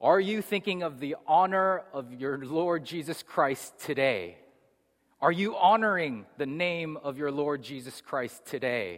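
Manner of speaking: all-out yelling. Retelling a man who yelled as the speaker walked to 8 a.m. classes: retelling a man yelling. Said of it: "literally yelling".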